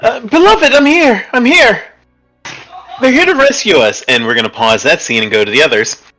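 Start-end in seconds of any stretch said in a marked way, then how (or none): 0.0-4.0 very high, ringing shouted call-out. Asked by a character if she is okay, a woman shouts out. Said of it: "and she shouts out".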